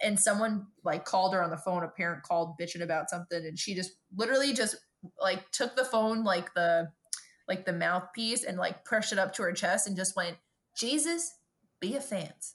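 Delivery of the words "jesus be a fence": biggest, heaviest Texas drawl, high and slow. Retelling a coworker's line to a parent on the phone: imitating a very thick Texas accent. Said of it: "in, like, the biggest accent I'd ever heard".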